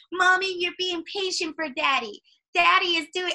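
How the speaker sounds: very high, put-on baby talk voice. Quoting a whole paragraph somebody wrote, in a baby voice. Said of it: "it was like in a baby's voice".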